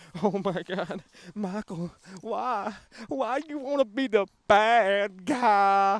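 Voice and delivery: very slow tearful crying, bad drawn out. Mocking rival fans by imitating them: mock crying fanboy. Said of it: "gonna be crying like".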